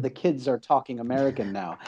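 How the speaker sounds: ordinary talk, nothing marked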